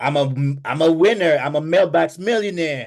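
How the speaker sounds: yelling loudly. Urging listeners to scream it so everybody hears it, screaming it. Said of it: "I need you to scream it".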